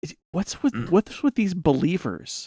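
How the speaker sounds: quiet, voice dropped a touch. Leaning toward the bartender to ask a question, slightly lowered voice. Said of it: "lowers his voice a little bit and says".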